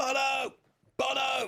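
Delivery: shrill, very high-pitched shout. Asked by the co-host to do it again: red carpet shout. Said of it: "Do the [name] shout".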